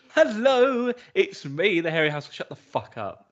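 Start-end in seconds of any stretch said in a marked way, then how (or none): 0.2-2.4 excited, drawn-out, high voice full of excitement. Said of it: "Full of excitement".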